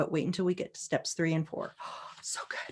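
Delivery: soft, hushed, teasing whisper.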